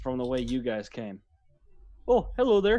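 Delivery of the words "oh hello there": put-on Minnesota accent, pitched up. Voicing a traveling high elf greeting the party: Minnesota accent.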